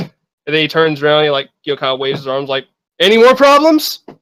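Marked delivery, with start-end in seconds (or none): 3.0-4.0 very high, shrill, loud, fed-up, exasperated voice. Voicing the innkeeper after he throws a guy out, exasperated innkeeper. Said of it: "the innkeeper is getting pretty visibly exasperated".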